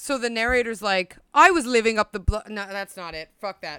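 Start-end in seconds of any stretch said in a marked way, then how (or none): 1.3-2.5 put-on Australian accent coming through. Quoting a narrator's line, slipping by mistake into an accidental australian accent. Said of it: "Australian or some shit that just came out of my mouth".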